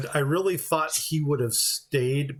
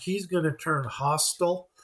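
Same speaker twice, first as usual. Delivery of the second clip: normal talking voice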